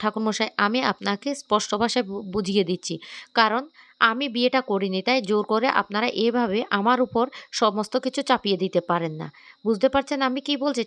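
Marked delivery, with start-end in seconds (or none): none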